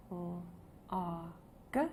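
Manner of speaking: whispered letter sounds. Reading lesson, sounding out a word's letters for the listener: whispering letter sounds.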